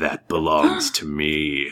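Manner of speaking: dragon character voice. Narrating a scene where a dragon lands on gold, speaking as the dragon. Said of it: "And he goes".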